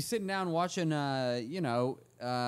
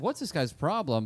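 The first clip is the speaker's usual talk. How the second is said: ordinary talk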